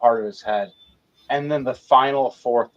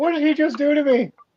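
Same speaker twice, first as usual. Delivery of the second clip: panicked, terrified, very high cry. Voicing a pilot after a heavy hit: terrified pilot voice. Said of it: "this Gundam pilot is terrified right now".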